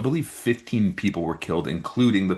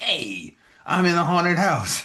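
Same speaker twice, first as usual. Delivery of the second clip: put-on Brooklyn accent, very high and squeaky; 12 semitones higher than usual. Imagining the short fat guy from Hey Arnold in a haunted house, Brooklyn accent. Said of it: "like Brooklyn".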